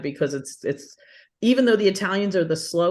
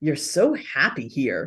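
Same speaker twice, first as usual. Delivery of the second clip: play-acted scornful, disdainful, low, drawn-out tone; 4 semitones lower than usual. Speaker quotes his son coming up to him, imitating son's disdainful tone. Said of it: "this kind of sound of disdain in his voice".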